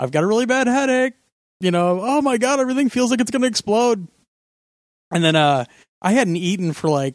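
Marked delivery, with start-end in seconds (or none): 0.0-4.1 put-on yelling, higher. Retelling a past MRI stress test, imitating own yelling out. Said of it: "I'm yelling out".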